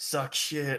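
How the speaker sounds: hushed whisper, very close and intimate. Voicing a mask that whispers in a character's ear: whispering in your ear. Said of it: "the mask whispers in your ear".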